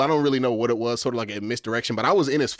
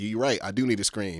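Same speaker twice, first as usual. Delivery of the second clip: hushed whispering; 3 semitones lower, 5 dB quieter than usual. Retelling his reply to another player mid-game, whispered back. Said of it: "I literally whisper back to him".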